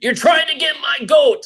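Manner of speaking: yelling teacher voice.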